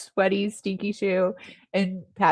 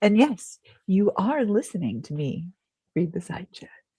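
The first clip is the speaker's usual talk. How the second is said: on-air DJ radio announcer voice; 3 dB quieter than usual. Reading the side chat aloud to listeners: radio announcer voice. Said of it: "That was a very radio voice".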